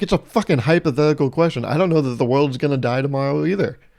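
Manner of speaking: usual speaking voice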